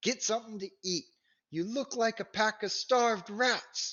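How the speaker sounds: loud, very high shout. A woman holding a pan and pitcher tells the group to eat; loud voice. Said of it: "her loud voice out of place".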